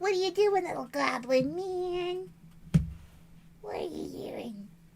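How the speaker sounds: very high, swooping, squeaky pet voice. Retelling speaking to Pierogi, the little goblin man, in a squeaky voice. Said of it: "I shouldn't do the squeaky voice".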